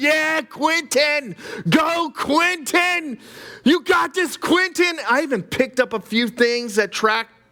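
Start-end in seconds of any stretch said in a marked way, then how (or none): 0.0-5.0 mock high, drawn-out cheering scream. Retelling cheering for a runner at a race: retelling a scream.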